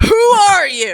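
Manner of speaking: thunderous, very loud booming voice. The game master voices an unseen speaker addressing the players, thunderous voice. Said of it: "you guys hear a thunderous voice that says".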